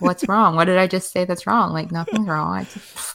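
normal talking voice

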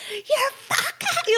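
high, laughing, mock freaking-out woman voice.

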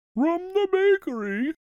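very high voice through a yawn. Reading a story, Owl hands Rabbit brownies and explains, yawning. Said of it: "he yawned".

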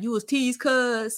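high, joking, clowning teasing tone. Retelling what Chad said when told she was teased, imitating Chad clowning. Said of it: "Chad was clowning low key".

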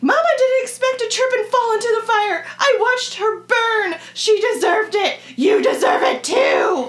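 strange, shrill, very high, loud voice. A narrator reads a character's lines aloud in a strange, high-pitched voice. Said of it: "he speaks in a strange, high-pitched voice".

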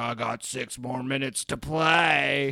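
horror villain killer voice, words drawn out. Describing a scene where a man cuts out another's heart: doing the killer's voice. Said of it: "You just like did the voice".

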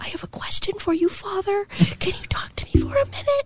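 hushed voice. Retelling asking a priest for a private talk, imitating own past whisper. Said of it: "and I'm trying to whisper".

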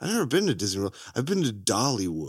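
low, dead straight, totally flat delivery. Retelling a line from a film to show why it works as a joke, imitating a deadpan delivery. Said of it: "He just says it deadpan".

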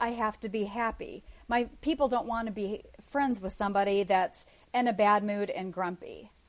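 usual speaking voice

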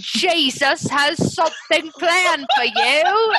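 worst, terrible British accent, high and slow.

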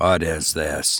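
hushed, quiet, very low voice. Narrator reads Benson after crossing over to the other man: quietly. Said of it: "He asked quietly".

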